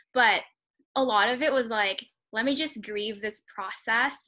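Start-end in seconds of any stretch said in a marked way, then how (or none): none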